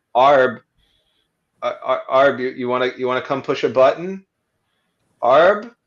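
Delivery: hushed, hesitant, half-hearted quiet call. Narrator voicing a character calling arb half-heartedly from a doorway, super low tone. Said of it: "says in a super low tone that's not meant to carry very well".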